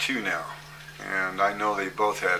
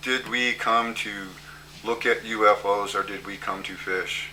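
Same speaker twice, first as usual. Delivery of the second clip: machine-like, inflectionless, flat robot monotone. Retelling what someone said on an outing to see a landed UFO, retelling a mechanical voice. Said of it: "Joel Karp says in a mechanical voice".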